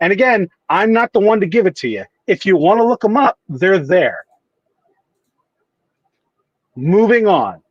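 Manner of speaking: curt, rude, irritated, a little annoyed. Refusing a questioner's request for specifics, a little annoyed and rude. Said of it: "You sound a little annoyed and rude there".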